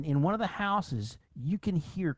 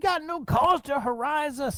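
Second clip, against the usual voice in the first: furious, angry yell, pitched way up; 10 semitones higher, 4 dB louder than usual. Voicing a miner who yells at horsemen harassing his camp: yelling miner. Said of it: "one of them yell".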